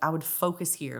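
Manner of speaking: ordinary delivery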